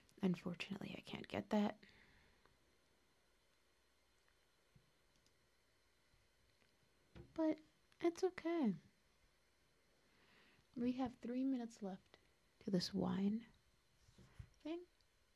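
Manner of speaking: tired, calm, sedated, weary, subdued speech. Thanking everybody for watching: tired, calm, sedated speech. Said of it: "I'm tired".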